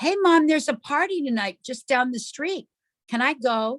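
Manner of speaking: put-on sweet-natured, really nice, polite tone. Retelling a daughter asking her mom if she can go, imitating asking really nicely. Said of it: "she says really nicely".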